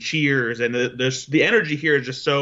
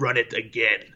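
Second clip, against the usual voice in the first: put-on sinister old man voice; 2 semitones lower than usual. Retelling what someone in a spotlight said into a microphone: Emperor Palpatine voice. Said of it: "in his Emperor Palpatine voice".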